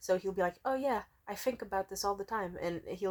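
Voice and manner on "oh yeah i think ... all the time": gentle, soft, sweet put-on German accent. Describing a man she likes and how he talks: imitating a soft German accent. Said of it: "he has a sexy German accent".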